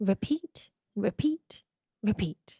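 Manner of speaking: soft, gentle, mild delivery. Sharing three words for a hashtag, gentle, not shouted. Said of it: "I'm not going to shout mine. I'm going to be gentle with mine".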